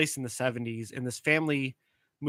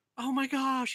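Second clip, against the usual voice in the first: panicked, freaked-out voice, higher; 13 semitones higher than usual. Retelling how a man who thinks he's invisible reacted: imitating someone freaking out. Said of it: "And he was freaking out".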